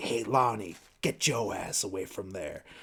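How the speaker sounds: whispered voice. Recounting a movie scene where a man warns kids from the bushes, retelling a whispered warning. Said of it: "he like whispers like".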